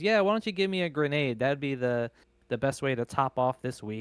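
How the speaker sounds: sardonic, tongue-in-cheek, sarcastic throwaway delivery. Describing a tv episode, retelling a woman's reply when asked what she wants, acting out a sarcastic remark. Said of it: "sarcastically she goes".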